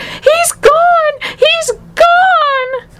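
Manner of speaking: shrill, very high, slowly stretched-out shriek. Narrator voicing Mrs. TV as she stares where her son had been; screaming. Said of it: "and she screamed".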